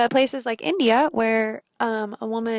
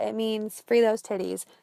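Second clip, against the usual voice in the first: plain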